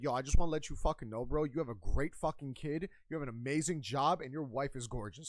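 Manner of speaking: hostile, aggressive, confrontational tone under nice-sounding words. Showing how to compliment someone you know well with an attitude: aggressive tone. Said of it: "you hear aggressive tone".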